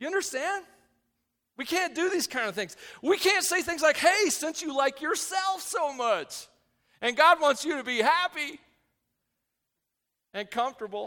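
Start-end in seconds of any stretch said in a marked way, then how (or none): 4.0-11.1 sneering, mocking, sarcastic tone. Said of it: "I'm being sarcastic".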